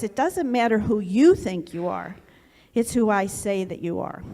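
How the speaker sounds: stern, firm voice of authority. Retelling what God said to them amid the noise in their head, retelling a stern voice. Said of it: "with a kind of a stern voice".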